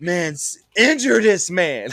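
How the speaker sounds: frustrated, high, loud, drawn-out scream. Speaker recalls watching a game at home, retelling own screaming at the television. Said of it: "I'm sitting here screaming at the television like".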